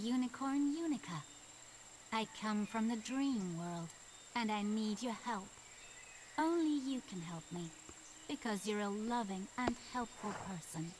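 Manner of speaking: creepy, strange-sounding unicorn voice. A unicorn from the dream world asks for help, creepy Unica unicorn voice. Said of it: "they've definitely put the creepy voice on this unicorn".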